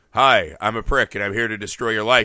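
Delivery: low, flat, toneless drone with no inflection. Discussing a movie, speaker acts out the kid arriving in the family: completely monotone. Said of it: "as a completely monotone".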